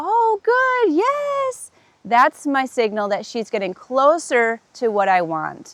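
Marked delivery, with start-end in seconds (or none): 0.0-1.7 very high-pitched encouraging voice, "yes" drawn out. Giving a verbal cue that she's getting closer, higher voice. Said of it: "my voice gets higher".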